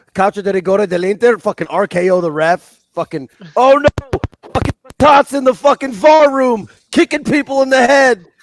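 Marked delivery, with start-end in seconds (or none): 1.4-8.2 all-out yelling, very loud, high, shrill, rising. Ranting about kicking the ref and the VAR room, yelling. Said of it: "You're yelling too much".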